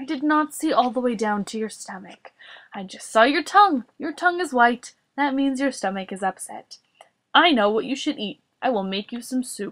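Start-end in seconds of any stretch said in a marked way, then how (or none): none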